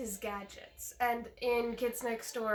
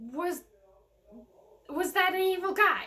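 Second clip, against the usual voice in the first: acted, high, loud, panicked, stammering and confused; 7 semitones higher, 8 dB louder than usual. Retelling a film scene as Number Three: imitating Number Three panicking. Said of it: "That's the expression he had when he was asking".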